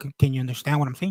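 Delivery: ordinary talk, nothing marked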